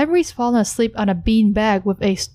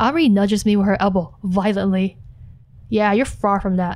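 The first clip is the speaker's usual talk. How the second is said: ordinary talk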